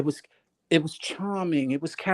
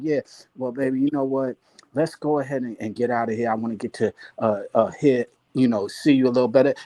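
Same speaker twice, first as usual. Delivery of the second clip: put-on smooth baritone voice, lower pitch; 4 semitones lower than usual. Retelling how a guy on a panel spoke to women: imitating a smooth baritone voice. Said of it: "because he had a baritone voice and he said it smoothly".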